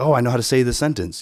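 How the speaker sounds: ordinary talk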